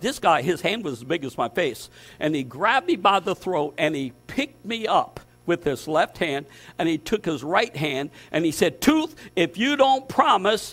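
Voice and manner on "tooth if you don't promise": pitched-up, yelling voice. Retelling how a man held him by the throat: imitating someone yelling. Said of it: "and he's yelling".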